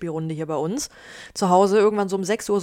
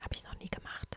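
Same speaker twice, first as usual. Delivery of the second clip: very soft, voiceless, barely audible whisper. Asked on a podcast whether she can whisper: whispered. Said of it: "Also man hört dich ja fast gar nicht".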